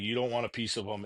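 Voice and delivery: ordinary talk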